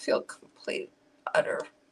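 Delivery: talking through tears. A livestreamer tells viewers about feeling depressed right now: crying while talking. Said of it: "I can't stop crying".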